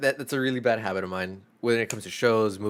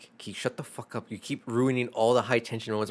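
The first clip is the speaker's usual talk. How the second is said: mock angry, mad, scolding tone. Retelling how a coworker scolded him during a movie: imitating an angry coworker. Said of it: "she was mad".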